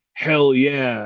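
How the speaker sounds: ordinary delivery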